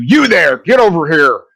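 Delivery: loud, high, barked yelling. Voicing a captain who calls the players over: yelling captain. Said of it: "he yells at you".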